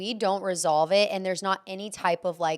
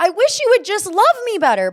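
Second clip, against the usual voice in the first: booming, very loud, high-pitched, swooping shrill yell; 12 semitones higher, 10 dB louder than usual. Describing own tone in arguments, imitating own yelling. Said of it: "but I'm, like, yelling it".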